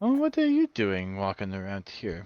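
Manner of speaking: low, swooping tree-spirit character voice. Narrating a game encounter, voicing a dryad who meets the traveler: dryad character voice. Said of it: "a um, dryad just kind of".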